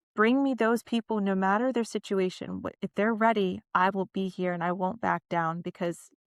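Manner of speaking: normal talking voice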